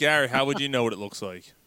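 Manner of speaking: ordinary talk, nothing marked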